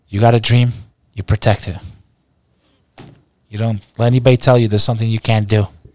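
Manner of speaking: grand, rousing movie-style speech delivery.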